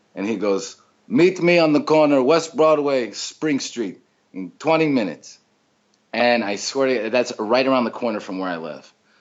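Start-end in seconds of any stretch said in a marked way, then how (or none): 1.1-5.4 put-on high, broken-English Italian accent. Retell a phone call, acting out the caller arranging to meet you in a put-on broken italian accent. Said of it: "he has like this broken Italian accent".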